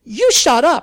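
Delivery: shrill, very loud, high outcry. A nurse turns on Sally, who wants to use her apartment window, crying out. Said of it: "the nurse cried".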